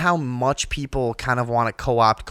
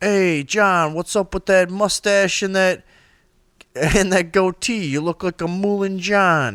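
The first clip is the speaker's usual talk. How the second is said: pitched-up, try-hard tough-guy mobster voice; 7 semitones higher, 3 dB louder than usual. Retelling a bar patron trying to talk like The Sopranos: Sopranos mobster voice. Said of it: "reaching for a reason to talk like The Sopranos".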